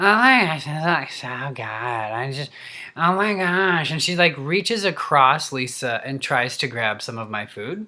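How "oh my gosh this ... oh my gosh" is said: put-on weird, breathy, tiny-tyke valley girl baby voice. Retelling how someone reached across for your food, imitating Stacy's breathy valley-girl voice. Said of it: "sound like a tiny little baby tyke, valley girl, weird, breathy".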